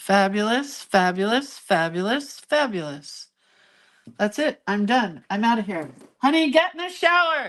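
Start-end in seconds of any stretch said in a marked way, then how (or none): 6.2-7.5 shrill, very high-pitched hollering. Waiting to go to breakfast, the speaker tells him to get in the shower, yelling. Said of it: "Now I'm yelling at him".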